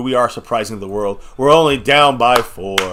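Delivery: tongue-in-cheek, sarcastic tone. Reacting to a kick that leaves the team down by four: sarcastic. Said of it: "I'm being sarcastic".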